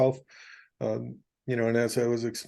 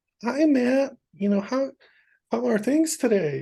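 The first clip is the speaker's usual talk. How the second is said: very high-pitched HR lady voice; 12 semitones higher than usual. Speaker mimics an HR lady greeting Matt: HR lady impression. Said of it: "I always do my H R lady impression".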